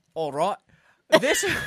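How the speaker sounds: put-on accent slipping into an Australian-sounding one. Acting out what the British said in the war, the speaker's put-on accent sounds Australian. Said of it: "That was Australian".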